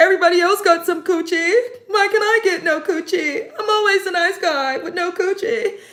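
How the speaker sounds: very high, tearful, blubbering sobbing cry. Mocking Edmund for crying over a woman: imitating Edmund crying. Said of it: "He was crying".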